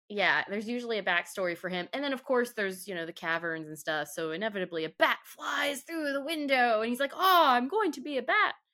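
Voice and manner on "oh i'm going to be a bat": put-on pitched-up Romanian accent, old-count vampire style. Speak as the bat flying in through the window, in a Romanian Dracula voice. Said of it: "Did you have like the Romanian Dracula voice".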